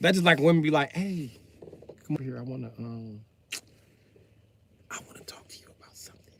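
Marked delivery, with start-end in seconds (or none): 0.9-6.3 quiet, secretive whispering. Acting out a woman asking her man to talk: imitating a woman whispering. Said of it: "Why is you whispering?".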